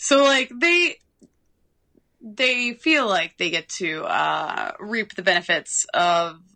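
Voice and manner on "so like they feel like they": ordinary delivery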